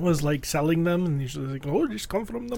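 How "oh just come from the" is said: put-on heavy old-lady Polish accent, soft and high. Recalling a little old lady selling marionettes, doing her thick Polish accent. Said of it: "she had a thick Polish accent".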